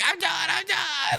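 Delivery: acted-out horrified crying child voice, very high. Retelling a vr video, imitate the horrified kid crying. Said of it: "like crying".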